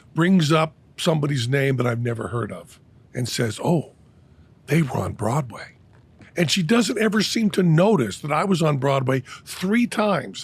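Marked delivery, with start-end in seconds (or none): 3.6-5.8 mock-awestruck tone, acted awe in the voice. Retelling what the speaker's wife says at the dinner table, with mock awe. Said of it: "with awe in her voice".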